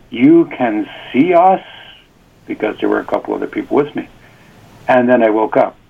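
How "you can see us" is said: astonished, surprised, very slow and drawn out. Retelling a question to a man seen in a vision dream: imitating own surprised tone. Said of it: "in a surprised tone".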